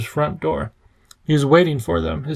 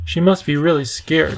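ordinary delivery

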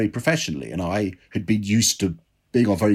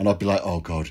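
usual speaking voice

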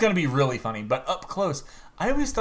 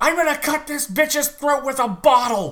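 very high-pitched comic put-on voice; 12 semitones higher, 3 dB louder than usual. Imagining Gilbert Gottfried cast as Jigglypuff, Gilbert Gottfried impression as Jigglypuff. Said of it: "Gilbert Gottfried's going to be Jigglypuff".

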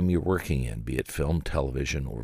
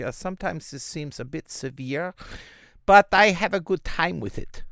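put-on German accent, pitched very high; 12 semitones higher than usual. Speaker demonstrating different accents moves on to german, in a german accent. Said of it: "Or perhaps I am doing a German accent".

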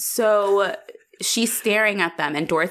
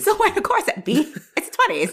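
put-on 1920s woman voice, much higher; 10 semitones higher than usual. Joking about how women talked to each other in the 1920s, imitating a 1920s woman. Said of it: "I'm so sorry for that voice".

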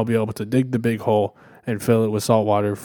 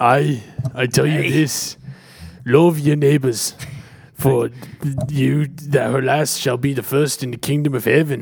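put-on Irish accent, played for comedy; 3 semitones higher than usual.

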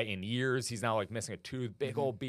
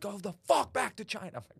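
put-on piercing, shrill, high-pitched screaming yell; 9 semitones higher than usual. Retelling how homeless people screamed at chinese people: imitating someone screaming. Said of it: "just screaming at Chinese people".

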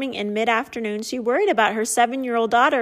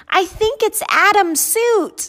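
put-on high, loud, astonished little boy voice; 9 semitones higher, 5 dB louder than usual. Reading a story, a young boy answers his mother: astonished young boy. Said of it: "With astonishment in the young boy's voice".

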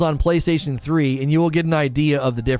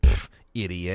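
mock dismissive, superior, smug, judging scoff; 10 semitones lower, 4 dB quieter than usual. Imitating the pronunciation voice picturing her arms crossed: imitating a smug judging woman. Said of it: "She's got her arms crossed and she's like".

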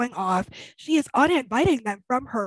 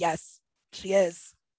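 put-on deadpan, much lower pitch, much slower pace; 6 semitones lower, 4 dB quieter than usual. Retelling an argument, the speaker quotes the reply, imitating Sumit's deadpan. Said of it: "Sumit's deadpan response of".

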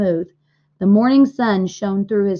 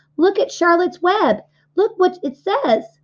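very high, exclaiming cry; 10 semitones higher than usual. Narrator reading Fern's line at the fairgrounds pen; crying out. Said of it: "cried Fern".

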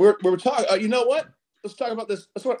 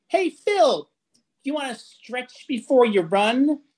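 put-on little mousy voice, much higher; 8 semitones higher than usual. Telling a work story, quoting a coworker's phrase in a little mousy voice. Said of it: "she's still like this little mousy voice".

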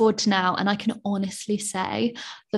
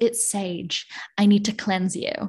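slow, amateur put-on American accent. Quoting the woman who answered her question about the burning stick, in an attempted american accent. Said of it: "That's my attempt at an American accent".

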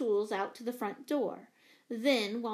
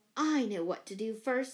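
plain reading voice

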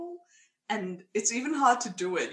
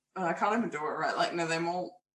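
ordinary talk, nothing marked

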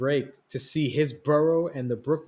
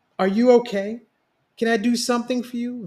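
worried, concerned tone, very high-pitched voice; 9 semitones higher, 3 dB louder than usual. After a hug, one asks the other if they are okay: concerned. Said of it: "Vibe asked, concerned".

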